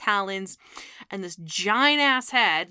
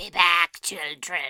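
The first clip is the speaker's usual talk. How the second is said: rasping, sinister, super creepy horror-creature villain voice; 2 semitones lower than usual. Describing a thing that comes through the door, imitating a super creepy voice. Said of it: "he's got a super creepy voice".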